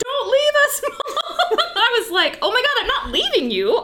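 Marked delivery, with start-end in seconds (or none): 0.0-1.6 acted high, drawn-out, tearful screaming wail. A mom retells her daughters coming out after her, imitating girls screaming and crying. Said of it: "the girls came out screaming, crying".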